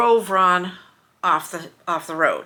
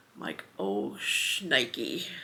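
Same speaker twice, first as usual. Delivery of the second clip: ordinary delivery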